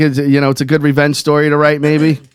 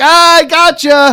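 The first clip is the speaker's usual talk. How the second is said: high, slow, gleeful delivery. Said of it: "you're like".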